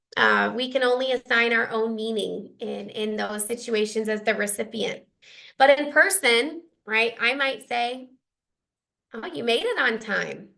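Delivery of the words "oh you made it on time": light, mildly surprised tone. Showing how the same line lands differently in person: almost surprised. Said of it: "I almost sound surprised".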